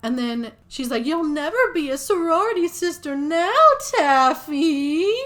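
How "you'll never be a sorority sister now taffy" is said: very loud, drawn-out put-on spooky voice. Retelling a movie character's line to taffy, in her spooky voice. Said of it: "why is that the spooky voice you're going for".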